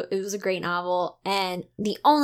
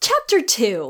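bright, perky, loud, super chipper announcer voice; 5 dB louder than usual. Imitating an audiobook chapter change: imitating Imogen's super chipper voice. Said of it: "Imogen's voice would be super chipper".

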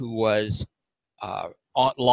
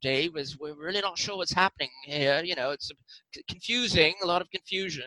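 bad English accent, said more quietly; 6 semitones higher, 6 dB quieter than usual. Retelling what Jane Stanley said in front of the window, bad English accent. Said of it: "it's a very bad English accent".

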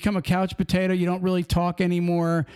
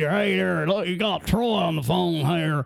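put-on friendly Arkansas accent. Retelling a recruiter's phone greeting: imitating Dwight's Arkansas accent. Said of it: "he had that Arkansas accent going on".

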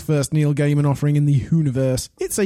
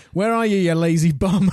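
ordinary talk, nothing marked

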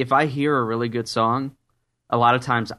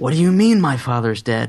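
badly acted, overwrought, hammy, overdramatic line reading; 4 dB louder than usual. Mocking horrible game voice acting with an example; overdramatic bad voice acting. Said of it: "when people are trying to be very emotional".

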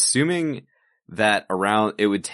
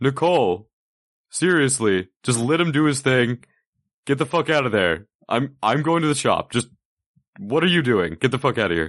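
fed-up, irritated calling out, pitched up; 5 semitones higher than usual. Voicing a character who calls down the stairs to Nicole: yelling down the stairs. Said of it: "I'm gonna yell down the stairs".

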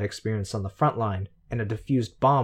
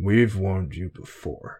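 curt, cold, deep, rumbling growl, low and short; 3 semitones lower than usual. Narrator reading Lung's line to Bonesaw, growling.

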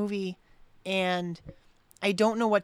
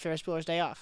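put-on deadpan, lower and quieter; 4 semitones lower, 6 dB quieter than usual. Retelling Mom's answer when asked what movie was picked, imitating her deadpan. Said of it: "she looked at me just deadpan and was like".

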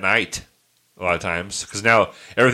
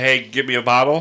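usual speaking voice

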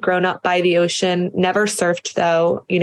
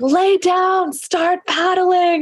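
mock, very high-pitched yell; 12 semitones higher than usual. Recounting a surf lesson where the coach yelled at the speaker, retelling a yell. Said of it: "Ryan's just like yelling at me".

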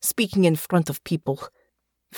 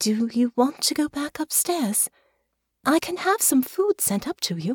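gentle, soft delivery, pitched up; 6 semitones higher than usual. A host comforts her struggling dinner guest and offers to send food up, said gently. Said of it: "Honor said gently".

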